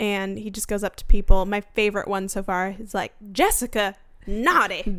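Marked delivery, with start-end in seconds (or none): 3.3-5.0 put-on thick Southern accent. Retelling a favorite TikTok clip of a parade elf, Tally the Elf's thick southern accent. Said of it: "thick southern, accent".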